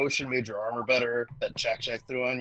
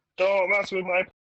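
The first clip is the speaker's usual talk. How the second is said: put-on stiff voice, higher and louder; 6 semitones higher, 5 dB louder than usual. Retelling a moment of standing with arms straight: imitating own stiff human impression. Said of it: "my best human impression".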